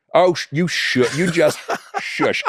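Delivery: put-on old-lady voice, scolding tone with a shush. Imitating a grandmother telling someone off: imitating an old lady saying shush. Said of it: "my mother has said that to me, my grandmother".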